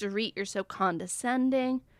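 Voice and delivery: normal talking voice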